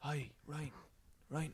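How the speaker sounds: soft failed whisper with the voice left in. Describing someone who talks during films and can't whisper, imitating Dale's failed whisper. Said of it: "His whisper's like".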